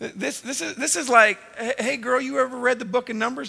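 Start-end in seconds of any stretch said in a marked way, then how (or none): 1.6-3.5 mock smooth, flirtatious delivery. Acting out a pickup line a husband uses: acting out a smooth pickup line. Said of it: "these are like pickup lines".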